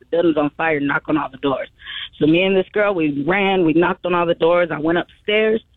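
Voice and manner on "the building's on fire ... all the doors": plain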